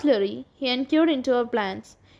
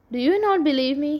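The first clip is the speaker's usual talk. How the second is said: haltingly stammered, stuttering; 3 semitones higher than usual. Narrator reads a man's line to the listener of his story, stammering. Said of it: "He stammered".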